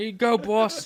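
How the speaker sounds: loud, very high-pitched put-on Boston accent. Voicing the guy who carries the one big round to the cannon: boston accent. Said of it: "He has a Boston accent".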